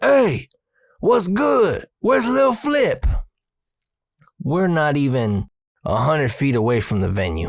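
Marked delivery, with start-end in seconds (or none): 0.0-3.0 play-acted, very high, yelled-out shout. Retelling how someone from the venue opened the door: imitating someone yelling. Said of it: "opens the door and yells".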